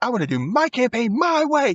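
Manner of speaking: put-on, shrill, very high, insistent yelling. Retelling a girl's words to her sister: imitating someone yelling. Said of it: "She's, like, yelling it".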